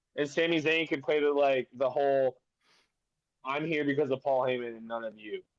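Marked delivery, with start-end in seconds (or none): none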